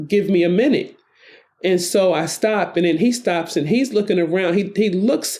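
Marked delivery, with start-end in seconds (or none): 0.1-1.0 steady, resolute voice. Retelling an encounter, the speaker quotes what they told a man, retelling a firm reply. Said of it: "when I say to him firmly".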